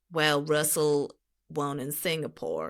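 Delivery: slow put-on Texan drawl. Delivering a racing talking point after being asked: Texan accent. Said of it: "do it in Texan accent".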